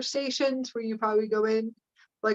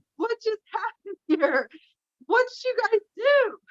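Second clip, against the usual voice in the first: very high-pitched yelling; 11 semitones higher than usual. Retelling walking in on the blue beings: retelling own yelling. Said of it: "I start yelling".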